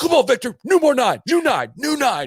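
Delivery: very high shrill screaming. Retelling a coach on the rope line urging a player: imitating someone screaming. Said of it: "screaming at him as he went".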